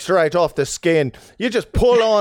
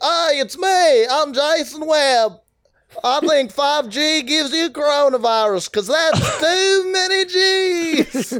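clumsy put-on North Carolina drawl, pitched higher; 8 semitones higher than usual. On the podcast, he asks to hear your accent of him; do a bad Jason Webb accent impression. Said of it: "let's hear your accent of me".

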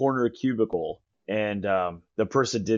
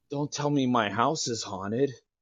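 put-on drunk man voice, quieter; 3 semitones higher, 3 dB quieter than usual. Retelling what a man said while walking through the alley on a ghost tour, imitating a drunk man. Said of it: "here comes this very drunk guy".

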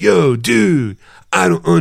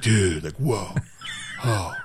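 casual dude-speak in a film-star style; 9 semitones lower, 11 dB quieter than usual. Comparing two actors' voices, doing Keanu Reeves: Keanu Reeves impression. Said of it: "Keanu Reeves is more like".

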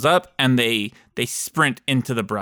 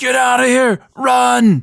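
very high, raspy, rough shout; 11 semitones higher, 7 dB louder than usual. Voicing a fleeing character warning the others: NPC shouting. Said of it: "and he shouts".

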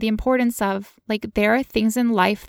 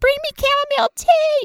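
mock raging scream, very high-pitched; 4 dB louder than usual. Retelling demands screamed at a boyfriend during pain: imitating own past screaming. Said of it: "I'm screaming at him".

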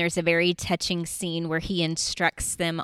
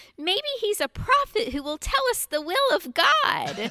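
very high, sweet, piping little voice. Retelling what the tiniest girl in the group said, in a sweet high-pitched little voice. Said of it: "she pipes up in this sweet little high-pitched voice".

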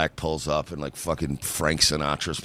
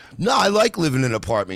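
mock forced cheerfulness, higher and louder; 11 semitones higher, 5 dB louder than usual. Imitating a divorced guy who misses his family but copes: forced cheerfulness. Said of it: "this is like the divorced guy that misses his family, but he's coping".

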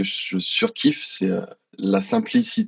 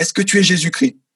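put-on very high, shrill yell, rattled off fast; 10 semitones higher, 5 dB louder than usual. Retelling how a man yelled at the speaker after a concert, retelling a shout. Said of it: "il me crie dessus".

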